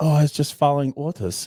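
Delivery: put-on convincing German accent. Imitating a Nazi's excuse while talking about wartime Germans, in a put-on German accent. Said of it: "very good German accent".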